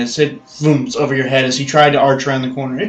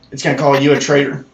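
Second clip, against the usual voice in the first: ordinary delivery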